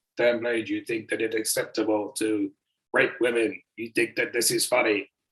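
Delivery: fake voice dropped deep and low. Retelling a masked guy on screen accusing you, put-on deep voice. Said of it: "he had some like deep voice on".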